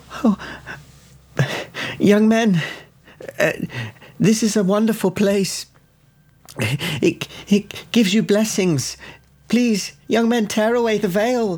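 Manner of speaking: very high-pitched yelping cries. A game master voices a woman on the floor; yelping. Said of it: "she's on the floor yelping, going".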